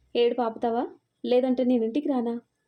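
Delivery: ordinary delivery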